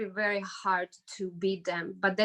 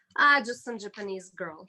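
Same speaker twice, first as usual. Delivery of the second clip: acted, dry, sarcastic throwaway delivery. Retelling what a coach said about a first-round opponent: imitating a sarcastic coach. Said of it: "He was being sarcastic".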